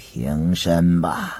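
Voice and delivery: strengthless, feeble, listless, very low voice. Narrating the emperor telling the two kneeling ministers to rise, in a weak, feeble voice. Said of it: "皇上有气无力地说道".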